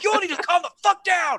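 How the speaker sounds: enraged, furious, very high-pitched yelling. Voicing a furious character who staggers up after a fall: furious shout in character. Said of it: "he's fucking furious".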